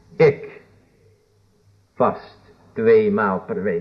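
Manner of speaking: heavy, hard emphasis on the syllable ik. Quoting a man about his twice-weekly fasting, stress on ik. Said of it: "De nadruk op het ik natuurlijk".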